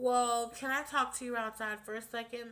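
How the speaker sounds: normal talking voice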